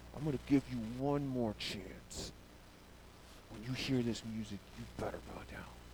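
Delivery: acted clenched-teeth voice. Speaker acting out what he says in verse 15, through gritted teeth. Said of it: "I can just hear the grit teeth".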